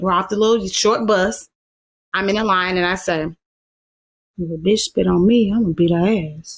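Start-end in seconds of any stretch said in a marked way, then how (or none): 4.4-6.6 put-on quiet mutter under breath, lower. Retelling a remark made while standing in a line: imitating muttering under breath. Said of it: "So under my breath".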